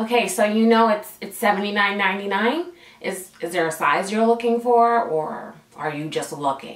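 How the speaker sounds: play-acted low, condescending, patronizing talking-down voice. Retelling what a woman said to the speaker, imitating her condescending tone. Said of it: "use that con- con- condescending tone".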